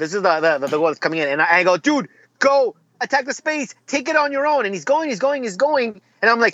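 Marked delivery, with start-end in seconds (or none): 1.8-4.7 mock screaming, very high-pitched. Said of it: "I'm screaming at the television".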